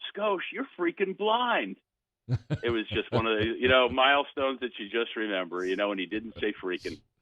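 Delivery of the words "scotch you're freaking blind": put-on scream, much higher. Retelling how a guy screamed at a blind man after a home run, retelling a scream. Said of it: "he screams at him".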